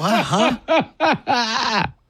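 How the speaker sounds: high laughing, slowly drawn out.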